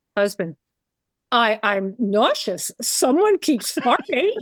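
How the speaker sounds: put-on slow, drawn-out New York accent. Retelling saying something to her husband across a plane aisle: imitating own loud New York voice. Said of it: "with my loud New York voice".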